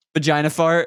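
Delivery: plain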